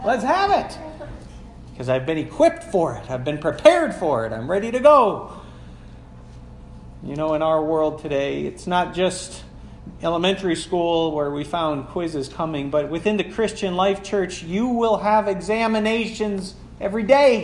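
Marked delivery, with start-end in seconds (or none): 0.0-0.8 high, loud, eager and confident tone. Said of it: "I'd say".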